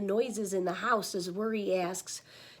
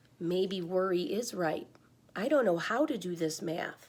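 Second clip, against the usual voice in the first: usual speaking voice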